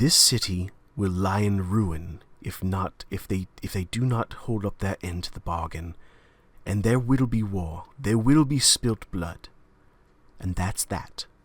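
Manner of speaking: calm through gritted teeth. Playing the king, leaning in to Jiro, through gritted teeth, very calm. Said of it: "through gritted teeth, he leans in and very very calmly says".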